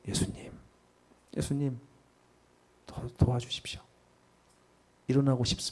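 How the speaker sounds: faint, barely audible whisper, voice barely coming out. A speaker showing how one prays when truly struggling, in a barely audible voice. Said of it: "속에서 나오지도 않는 목소리로".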